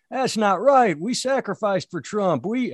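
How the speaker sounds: bad put-on Southern accent. Quoting an angry founder of Cowboys for Trump: bad Southern accent. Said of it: "I always do a bad Southern accent".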